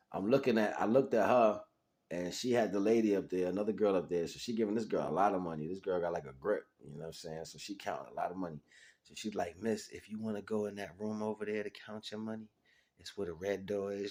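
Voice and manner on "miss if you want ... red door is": soft, wary, guarded half-whispered hush. Telling a story, the speaker quotes a woman pointing her to a room, retelling a half-whisper. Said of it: "She was whispering like".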